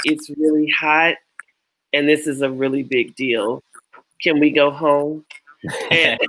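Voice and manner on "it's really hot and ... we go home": ordinary talk, nothing marked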